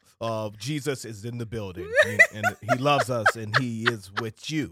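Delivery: low, mock uptight, mic-shy voice.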